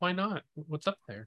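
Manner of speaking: hushed, soft, high, quiet, low-key voice. Character crouches down to another character's level and asks, quietly said. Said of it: "I'm just going to kind of quietly say".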